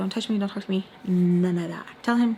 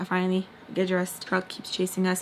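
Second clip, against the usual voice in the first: plain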